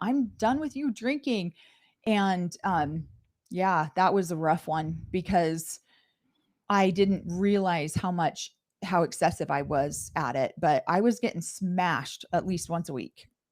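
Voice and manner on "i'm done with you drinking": high, raised yell. Retelling an argument with the oldest daughter: imitating someone yelling. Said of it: "she started yelling at me going".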